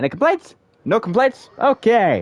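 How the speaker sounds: loud, very high-pitched, hyped streamer-style chatter. Streamer asks the audience for complaints before heading to Mondstadt, talking loudly. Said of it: "Why am I talking so loudly?".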